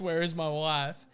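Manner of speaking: zombie-like delivery. Describing a character who comes back looking for his wife, in a zombie voice. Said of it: "He's like basically a zombie voice".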